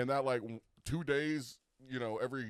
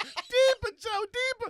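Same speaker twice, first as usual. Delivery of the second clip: very high, squeaky woman's voice; 10 dB louder than usual. Retelling a workout video, quoting the girl who came in: imitating the girl in the video. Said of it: "just like that".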